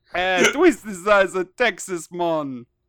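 loud put-on Jamaican accent. Asked to do jamaican, the speaker repeats the phrase in a jamaican accent. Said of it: "Do Jamaican".

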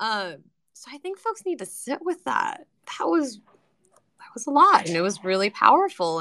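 teary voice, on the edge of crying. After something powerful, the speaker addresses the group, getting teary. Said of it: "and I'm getting teary".

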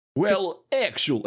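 unconvincing, put-on Australian accent. Mimicking how Australians talk, in a put-on Australian accent. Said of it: "So Australians get to be like, well, actually".

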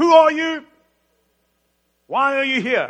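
shrill, booming, very loud, high barked delivery. Retelling how a centurion at huge gates challenges a rabbi, barking out questions. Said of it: "he barks out".

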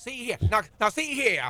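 very high cartoon rooster voice, crowed out. Pressing someone to just say it, slipping into a Foghorn Leghorn voice. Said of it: "it sound like foghorn leghorn?".

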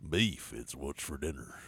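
very deep bass voice, low and hushed. Repeating a beef slogan for the others: low-pitched voice. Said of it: "You hit that low note".

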